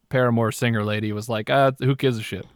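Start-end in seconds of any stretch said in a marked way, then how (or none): none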